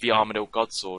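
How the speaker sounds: ordinary delivery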